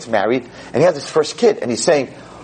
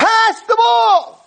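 put-on very high-pitched, shrill screaming yell; 4 dB louder than usual. Speaker retells what a man watching the game on the couch screamed: screaming. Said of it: "and he's screaming".

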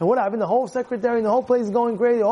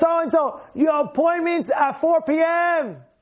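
mock screaming, higher; 6 semitones higher than usual. Retelling how a secretary called an old patient: imitating someone screaming.

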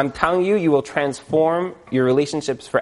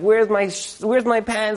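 mock screaming, higher; 6 semitones higher than usual. Retelling a husband rushing out, looking for his pants: imitating husband screaming. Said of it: "he's screaming and he's like".

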